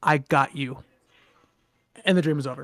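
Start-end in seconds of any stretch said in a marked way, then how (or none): 0.0-0.8 very deep, dropped, rumbling monster voice. Retelling a nightmare creature leaning in to speak; deep, rumbling voice. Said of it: "like in a very deep, rumbling voice".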